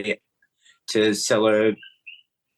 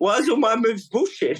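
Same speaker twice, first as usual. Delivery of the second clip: put-on high-pitched Greek accent. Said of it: "so he had that accent".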